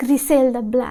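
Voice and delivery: words pronounced the Mexican Spanish way. Saying a tv show's title in a mexican spanish accent. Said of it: "I feel like I'm saying it with a Mexican Mexican accent".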